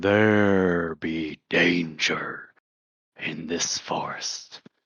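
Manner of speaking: deep, low, hushed voice, very slow. Quoting what he says to everybody, in a low, hushed, deep voice. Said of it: "in his low, hushed, uh, deep voice".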